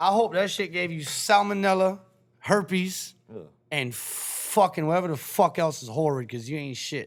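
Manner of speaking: mad, slow, angry ranting. Ranting at people who waited in line: mad. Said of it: "Why are you so mad?".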